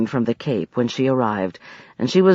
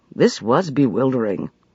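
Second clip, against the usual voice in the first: plain reading voice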